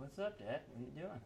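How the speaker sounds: put-on kid's voice. Voicing Junior after he opens the fridge: imitating Junior. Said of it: "He's like".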